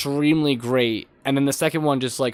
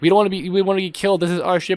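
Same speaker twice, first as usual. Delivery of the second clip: high, mock yelling, like a whole crowd; 5 semitones higher than usual. Retelling a scene from a movie commercial: imitating people yelling.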